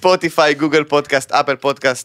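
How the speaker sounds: put-on Israeli accent.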